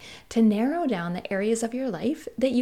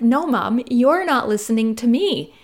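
loud, upset, imitated child screaming; 6 dB louder than usual. A mother retelling how her son answers her: imitating a child screaming back. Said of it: "he'll just scream back at me".

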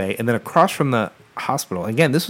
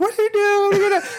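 screaming, much higher. Recalling the driver speeding off while the speaker rode along: retelling a scream. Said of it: "The whole time I'm screaming like".

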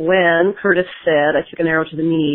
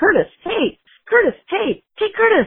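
mock very high, drawn-out calling yell. Telling how they mistook someone in line for curtis and called to him, retelling a yell. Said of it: "I was yelling".

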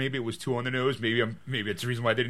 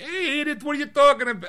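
very high-pitched New York accent; 13 semitones higher, 4 dB louder than usual. Showing how he could have overdone the role: Archie Bunker impression. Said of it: "he could have done like a New York accent".

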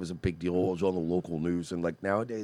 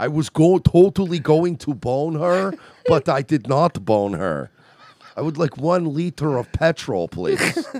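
mock European accent, said louder; 8 semitones higher, 10 dB louder than usual. Doing a bit in the accent of the European guy from Family Guy. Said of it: "the accent like the fucking the European guy".

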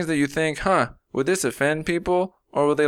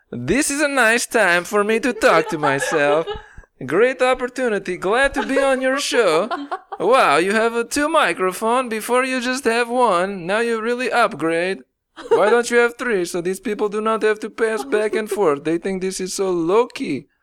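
put-on Russian accent; 6 semitones higher than usual. A guest talking to the host on his show, in a put-on Russian accent. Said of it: "Is that your Borat or is that your Russian?".

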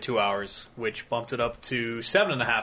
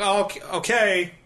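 high, put-on, reluctant, grudging voice. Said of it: "And he's like".

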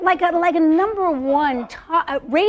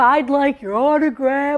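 mock-masculine dude voice, deep and put-on; 3 semitones lower than usual. Retelling what the guys said to the lady in the photo; put-on man voice. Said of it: "Here I go with the man voice again".

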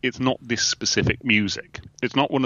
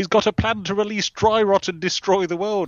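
very high, shrill shouted cry; 10 semitones higher than usual. Retelling a TV scene where Tara bursts in: imitating Tara shouting.

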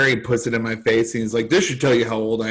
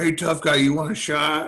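mock high, needling taunt called out loud; 5 semitones higher than usual. Retelling someone calling across the bar: imitating someone yelling. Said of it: "yelling from across the bar".

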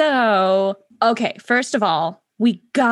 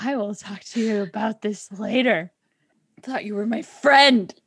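hushed, quiet, pointed reproachful tone. Speaking in character to a friend after being teased: lowered voice. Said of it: "She lowers her voice".

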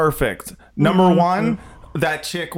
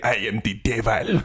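very low, put-on, attempted Nigerian accent; 7 semitones lower, 4 dB quieter than usual. A speaker attempts the accent after admitting it's hard, attempted nigerian accent. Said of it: "I think that's Nigerian".

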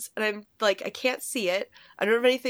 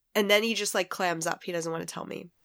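ordinary talk

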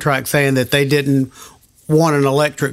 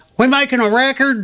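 put-on very high-pitched country accent; 10 semitones higher than usual. Recalling how the band's recording take got counted off, James Stroud in country accent. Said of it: "in a country accent".

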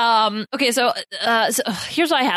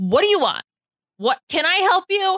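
high, raised yell; 6 semitones higher than usual. Retelling yelling at a cat meowing all night outside the bedroom: imitating own yelling at a cat. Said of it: "And so I would just yell at her".

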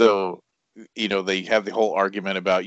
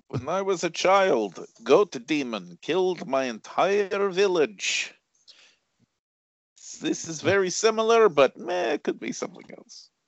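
high, slow mock Eastern European accent.

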